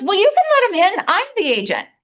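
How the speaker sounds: mock projecting, loud, high-pitched sing-song voice. Retelling what an agent said over the phone: imitating someone speaking really loudly. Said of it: "he was speaking really loudly".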